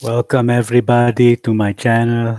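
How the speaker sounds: worst fake Russian accent ever. Greeting viewers at the start of the channel video: worst russian accent ever.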